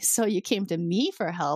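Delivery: play-acted very smug, self-satisfied slow drawl. Retelling a Star Trek scene, the JAG officer answers Picard: mock-smug. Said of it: "she then is like very smugly".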